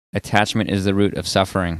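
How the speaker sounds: ordinary talk, nothing marked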